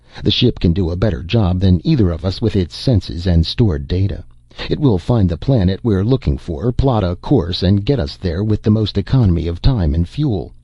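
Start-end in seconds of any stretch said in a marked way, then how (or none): none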